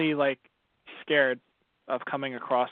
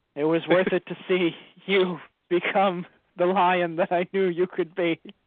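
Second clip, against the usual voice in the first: put-on Italian accent, higher and louder; 5 semitones higher, 5 dB louder than usual. Playing a dying JoJo character to a friend: very Italian accent. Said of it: "you put on the most Italian accent".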